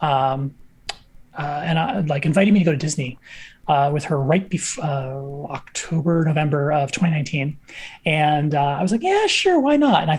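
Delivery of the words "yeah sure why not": mock, very high, sarcastic agreeing tone. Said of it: "in kind of a sarcastic tone of voice".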